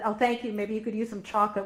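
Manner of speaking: plain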